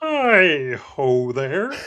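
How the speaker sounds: cartoon frog puppet voice. Guest greets the podcast hosts through a hand puppet, Kermit the Frog voice. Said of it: "speaking in the Kermit voice for you all".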